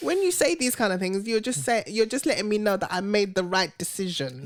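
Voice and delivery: ordinary delivery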